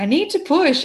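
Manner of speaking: insistent, high yelling. A woman in labor in the shower retells yelling at the midwife, retelling a yell. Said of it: "I'm yelling at the midwife".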